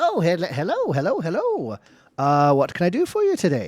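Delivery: swooping, sing-song gnome voice. Describing a gnome restringing bows who greets you as you walk in, gnome shopkeeper voice. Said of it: "a gnome in the corner. He goes".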